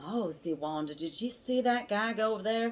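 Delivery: surprised Southern US accent. Showing how people reacted to something shocking, Southern accent. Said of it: "you have to do Southern".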